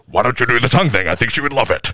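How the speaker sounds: put-on alien creature voice. Imagining having Venom in their body, the speaker does a Venom voice. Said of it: "I feel like it would be like this".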